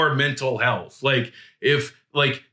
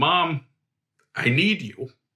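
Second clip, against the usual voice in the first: acted-out tearful crying voice; 2 semitones higher than usual. Retelling going up to their mom and waking her, retelling a tearful plea. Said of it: "and I was crying".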